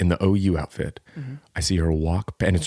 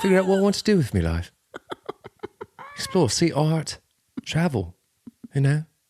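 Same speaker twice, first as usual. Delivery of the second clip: mock posh European schoolboy voice, higher pitch; 10 semitones higher than usual. Mocking the idea of a gap year, playing a European boarding school boy. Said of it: "like, European boy from boarding school".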